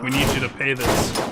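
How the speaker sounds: usual speaking voice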